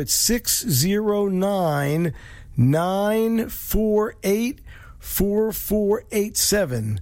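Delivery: spoken slowly, unhurried. Show host giving listeners the call-in number, said slowly. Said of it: "Hope I said that slow enough".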